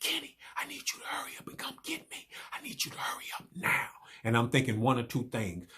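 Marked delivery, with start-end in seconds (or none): 0.0-3.9 urgent, breathy, hushed whisper. Speaker retelling a phone call from a man he had dropped off, whispering. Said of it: "he whispering".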